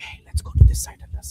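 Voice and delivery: hushed whisper close to the mic. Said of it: "whispering the mic".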